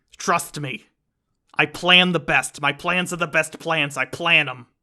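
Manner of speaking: loud, boastful bragging tone. Continuing to joke about the line, Joe Pesci doing Trump. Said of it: "your voice is like Joe Pesci trying to do Trump".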